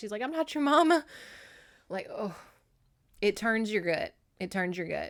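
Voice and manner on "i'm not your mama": high-pitched, tearful crying through the words. Retelling a nurse who is crying while answering: imitating someone crying. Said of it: "And Jenny's crying".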